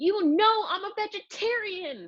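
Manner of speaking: very high, slow, drawn-out, stretched yelp. Reading a story aloud as Katina yelps; super high Katina voice. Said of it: "my voice went super high".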